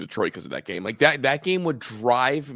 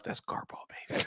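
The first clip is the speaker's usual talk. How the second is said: mock whisper, quieter. Teasing the other speaker by imitating them whispering to themselves: imitating someone whispering. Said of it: "You whispered to yourself".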